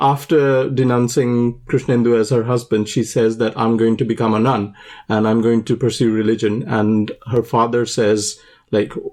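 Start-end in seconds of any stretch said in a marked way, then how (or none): none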